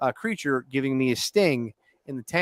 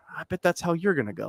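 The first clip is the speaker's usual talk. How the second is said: put-on whisper, higher pitch; 4 semitones higher than usual. Retelling what the roommate whispered in the ear: imitating a whisper. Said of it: "leans in and whispers in my ear".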